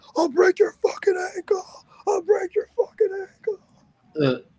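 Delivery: very high, shrill scream. Describing Kurt's ankle lock finish, imitating Kurt screaming. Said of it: "he literally screams".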